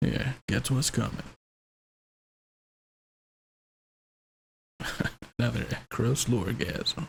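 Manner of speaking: on-air radio DJ announcer delivery. Joking about how to introduce episodes, talking in a radio DJ voice. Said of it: "I'll start talking like a radio DJ".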